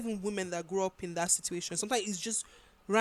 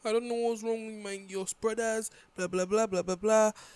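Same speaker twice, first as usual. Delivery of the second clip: crying, tearful, complaining lament. Retelling how a mother calls her daughter: imitating a crying mother. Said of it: "her mom used to call her and be crying and be like".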